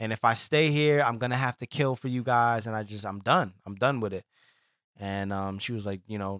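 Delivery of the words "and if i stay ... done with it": normal talking voice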